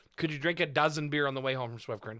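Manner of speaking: ordinary delivery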